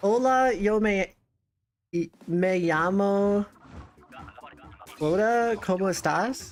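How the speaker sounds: hesitant, unsure delivery with rising question-like tune. Trying out saying a greeting, unconfident, rising like a question. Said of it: "I'm saying it like it's a question".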